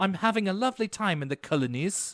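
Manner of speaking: put-on heavy, strong South African accent. Retelling how a show character says colonies: imitating Sarah's South African-sounding accent. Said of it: "sounded like she was pronouncing it in that accent".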